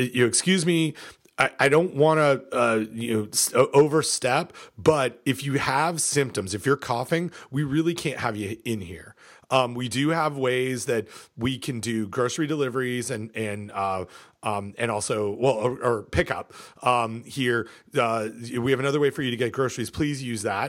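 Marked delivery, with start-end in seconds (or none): none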